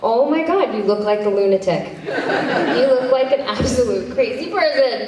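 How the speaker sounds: high-pitched, laughing while talking. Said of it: "they're cracking up laughing, going".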